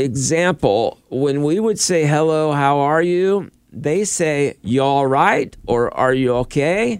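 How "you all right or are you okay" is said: bad, poor put-on Australian accent. Explaining how people in Australia greet you, in a bad Australian accent. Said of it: "That was not a good accent".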